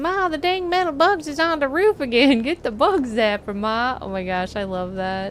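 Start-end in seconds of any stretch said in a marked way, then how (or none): 0.0-4.0 put-on hillbilly yell, higher and slower. Acting out an imagined person yelling from inside, in a put-on hillbilly voice. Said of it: "someone yells in hillbilly voice".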